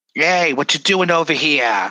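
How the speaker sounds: put-on robber-style Brooklyn goblin accent. Contrasting goblins with gnomes, speaker demos a Brooklyn 'I'm gonna rob ya' goblin accent. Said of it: "the Brooklyn, I'm gonna rob ya accent".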